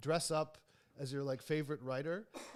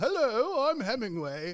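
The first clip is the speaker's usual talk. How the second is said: put-on upper-class British accent, pitched up; 8 semitones higher, 9 dB louder than usual. Retelling how someone went around talking, in a posh british accent. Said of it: "talking in like a like a posh British accent".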